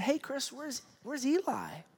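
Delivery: the sweetest, gentlest tone, soft and high. Retelling his wife asking where a child is, imitating her sweet voice. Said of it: "my wife in this most just sweet voice said".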